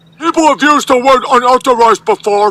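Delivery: put-on squeaky, very high, jokey funny voice. In a discussion, remarking on a guest's word choice in a funny voice. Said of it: "you're saying it in a funny voice".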